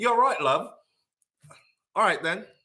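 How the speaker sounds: put-on high British accent. Answering his family, who told him to change back his accent, in a british accent. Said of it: "change back your accent".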